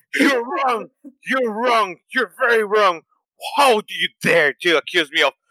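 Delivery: high, furious, angry outburst. The speaker retells telling off someone who called her a liar, acting out getting super angry. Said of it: "I actually lose it and I just went super angry".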